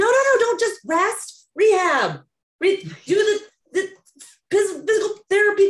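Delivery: put-on screaming. Reacting to a lady's story about resting instead of rehab, retelling a scream. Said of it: "I'm screaming like".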